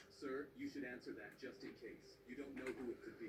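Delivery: plain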